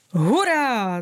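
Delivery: delighted, enthusiastic, drawn-out excited cheer. Narrator voices a pink clover responding to Šťastenka, exclaiming enthusiastically. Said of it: "zvolal nadšeně růžový jetel".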